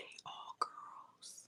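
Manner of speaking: barely voiced, very quiet hushed whisper. Reacting to hearing about four daughters, whispering. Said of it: "I had to whisper that to you".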